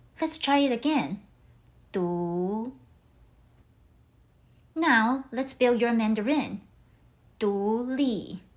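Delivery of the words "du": du rising, said in second tone. Showing learners how to say du in mandarin: rising second tone. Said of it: "Your voice rises like you're asking a question".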